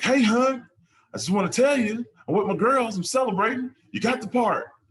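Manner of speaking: put-on real Southern accent, pitched very high and loud. Retelling what a woman said on FaceTime about getting the part, in a southern accent. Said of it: "She got that southern accent".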